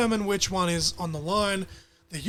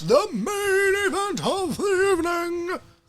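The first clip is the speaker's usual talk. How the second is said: very high ring announcer call, main word stretched; 11 semitones higher than usual. Going through the match cards, the speaker announces the main event in a UFC ring announcer voice. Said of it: "I went into my fucking U F C ring announcer".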